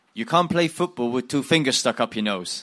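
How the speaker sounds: put-on thick Dutch accent. Retelling a memorable quote from an interview, in Jan Poortvliet's thick Dutch accent. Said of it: "he had quite a thick Dutch accent".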